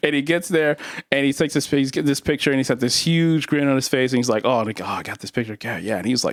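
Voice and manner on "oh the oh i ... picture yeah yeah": put-on mumbling voice. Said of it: "That's a good impression of your dad".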